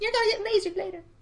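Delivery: very high, fast, cute, adorable kitty voice. Retelling a tabletop game, voicing the baby beholder in an adorable cat voice. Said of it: "adorable cat voice for the baby beholder".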